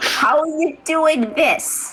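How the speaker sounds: calling out high, as over a phone line. Maria on a phone call with Shamrock's voice, screaming into the phone. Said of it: "Maria like screams into the phone".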